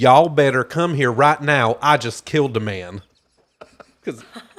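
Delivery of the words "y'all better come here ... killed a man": loud, frantic Southern country accent. Performing a made-up line about killing a man, in a southern accent. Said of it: "I partially want to say this in a southern accent".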